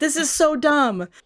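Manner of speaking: play-acted fed-up irritation. Retelling a scene where Ben throws the pilot against a wall: mock-angry as Ben. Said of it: "He's so angry".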